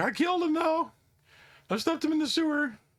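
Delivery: out of breath. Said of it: "he's out of breath".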